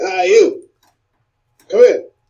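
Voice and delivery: calling out, hailing. Playing a character who calls out to someone to come in: calling out to someone. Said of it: "I'll call out to somebody and say".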